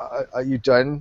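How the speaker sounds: slow, quavering, shaky, unsteady voice. Retelling the end of a beatdown video, imitating Darwin's shaking voice. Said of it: "voice was shaking at the very end".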